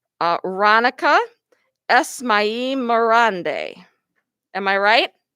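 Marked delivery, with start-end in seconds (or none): 0.4-3.8 very slow, careful, each syllable drawn out. Announcing a student's long name at a school recognition, said real slow. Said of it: "I'm going to say this real slow".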